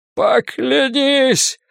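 very high-pitched groaning. Carter groans at the boy as the doctor pulls him away, groaning. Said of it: "простонал Картер".

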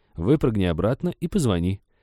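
plain

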